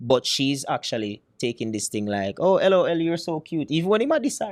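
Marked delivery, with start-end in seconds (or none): 2.4-3.7 mock sarcastic voice, higher pitched.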